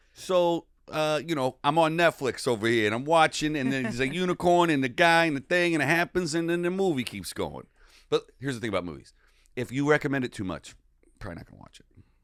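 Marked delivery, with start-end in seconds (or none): 0.2-7.7 bad, loud, high put-on New York accent. Told to continue the comedy bit by a co-host, new york accent.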